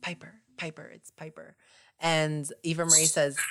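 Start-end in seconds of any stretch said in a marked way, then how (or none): 0.0-1.5 very soft whisper, barely audible, under the breath. Retelling a backstage segment where Piper gives her name: imitating Piper whispering. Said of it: "And Piper is whispering".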